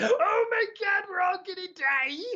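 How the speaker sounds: very high, terrified, panicked shriek. Explaining where a voice came from: imitating people screaming. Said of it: "I was just imitating people screaming".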